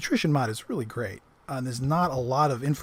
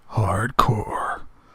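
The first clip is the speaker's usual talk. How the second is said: breathy put-on celebrity whisper, deliberate and hushed; 4 semitones lower, 4 dB louder than usual. Imagining how a favorite celebrity would say hardcore: Neil deGrasse Tyson voice. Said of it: "I'm trying to channel uh, one of my favorite celebs out there, Neil deGrasse Tyson".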